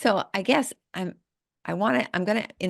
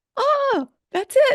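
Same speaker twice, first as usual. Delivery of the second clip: high, loud, excited gasp of realization.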